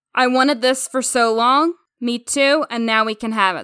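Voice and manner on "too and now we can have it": ordinary talk, nothing marked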